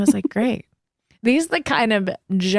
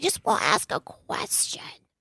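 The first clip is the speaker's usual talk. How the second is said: put-on cute, soft, husky little-kid whisper; 9 dB quieter than usual. Quoting what he said to her, in his little husky, cute voice. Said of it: "he has this little husky, little like cute voice".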